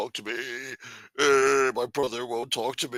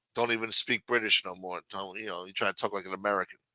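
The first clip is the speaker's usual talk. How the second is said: ordinary delivery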